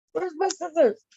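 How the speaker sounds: put-on mild, high voice calling out from afar. Teasing the other speaker by repeating their line: imitating someone yelling. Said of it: "Why are you yelling like you're yelling across the house?".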